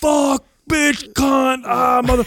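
mock very high, piercing, shrieking scream. Speaker retells a childhood outburst in front of family, retelling own screaming. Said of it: "I start screaming the worst obscenities".

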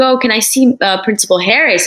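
normal talking voice

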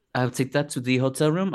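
poorly faked French accent. Imitating a drag queen taking a prop to the hotel room: Rita Baga French accent. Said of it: "I'm doing the worst French can".

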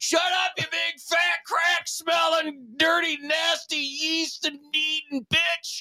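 furious, drawn-out angry rant, pitched way up. Trading jokes with friends, then launching an insult: mock angry rant. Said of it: "Dang, that's a lot of anger".

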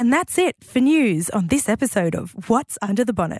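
polished, smooth podcast or radio announcer voice. Prompted by the other hosts to close the news segment, in a podcast radio announcer voice. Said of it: "finest kind of podcast, radio announcer voice".

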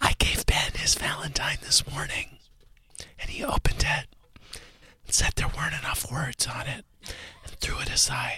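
whispered speech. Greeting John on Whisper Wednesday, whispering. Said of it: "We're whispering for as long as we can".

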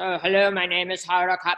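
bland, stiff, boring news-anchor delivery. Retelling how someone sounded once out there: imitating Hoda Kotb's boring news voice. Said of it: "she goes into boring news".

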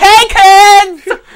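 flamboyant clown character voice. Imitating a mascot greeting children: flamboyant Ronald McDonald voice. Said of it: "You just put that into the character".

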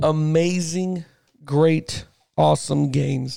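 very slow, drawn-out sarcastic drawl. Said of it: "And I say that sarcastically".

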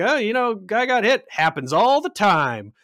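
blasé, unbothered, light-pitched offhand tone. Quoting a scene's final line, imitating Stephen King's unbothered delivery. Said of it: "He's very, um, unbothered by this".

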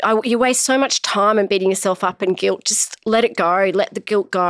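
ordinary delivery

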